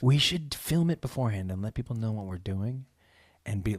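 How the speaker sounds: very low, hushed, secretive, conspiratorial half-whisper. Planning with a co-host to cheat at board game night; half-whispering. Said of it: "Why am I whispering?".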